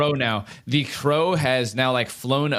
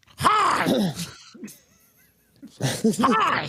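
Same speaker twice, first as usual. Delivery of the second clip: very high, shrill, sing-song, swooping crow yells; 11 semitones higher than usual. A talking crow starts bobbing his head and yells in a shrill crow voice. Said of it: "yelling hi in his shrill crow voice".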